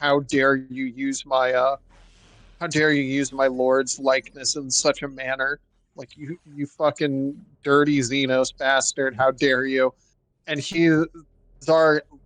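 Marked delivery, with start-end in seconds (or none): none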